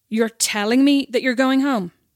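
put-on yelling. Recalling saying they had a migraine, speaker imitates a man's reply, retelling a loud yell. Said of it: "Like really loud".

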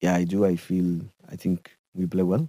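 low, mellow imitated voice. Showing how he sounds when he talks now: imitating a low, mellow voice. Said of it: "he's very low, mellow now".

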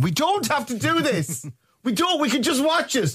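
put-on shouting. Retelling how she reacts while he puts on subtitles, retelling someone shouting. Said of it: "she's shouting at me going".

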